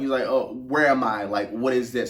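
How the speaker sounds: ordinary talk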